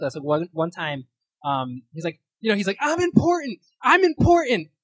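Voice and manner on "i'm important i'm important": ridiculous, very high, very loud, drawn-out yell. Retelling a Will Ferrell SNL dinner argument: imitating Will Ferrell yelling. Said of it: "yelling match they get into".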